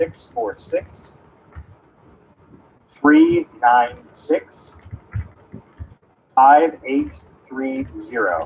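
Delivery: slow, deliberate, each digit read separately. Repeating a phone number after a listener asks for it slower: said slower. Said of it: "Please say it slower".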